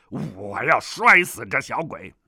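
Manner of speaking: harsh, loud barked outburst. Reading a story, the South Sea villain threatens the crying child, barked. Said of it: "南海恶神喝道".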